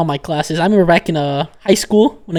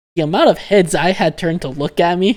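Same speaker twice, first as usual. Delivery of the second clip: normal talking voice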